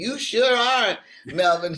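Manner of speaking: mock, loud, high, drawn-out hollered yell. Retelling what was shouted when Melvin spoke: retelling a yell. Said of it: "I yelled out".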